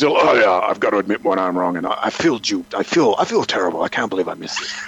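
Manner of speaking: drop into a low put-on voice. Predicting what he will say within months, Alex Jones impression. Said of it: "You do a great impression of him".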